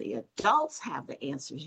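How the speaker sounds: "adults" emphasized. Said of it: "But you did not say".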